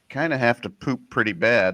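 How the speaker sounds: ordinary delivery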